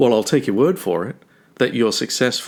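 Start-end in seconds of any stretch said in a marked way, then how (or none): none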